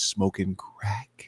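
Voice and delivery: secretive, soft, hushed whisper. Retelling what a lady cop said at the door: imitating a whisper. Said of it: "And then she started whispering".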